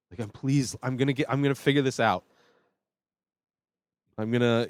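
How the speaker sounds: desperate begging, stumbling and tripping over words. Retelling how a character begs after being overheard: imitating someone begging. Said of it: "just begging".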